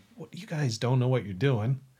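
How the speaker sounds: ordinary talk, nothing marked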